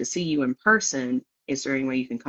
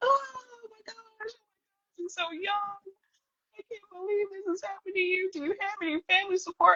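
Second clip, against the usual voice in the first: put-on, very high, tearful, sobbing gush; 6 dB quieter than usual. Retelling a nurse's reaction after the speaker's cancer diagnosis, imitating a crying nurse. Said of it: "The nurse is crying her head off".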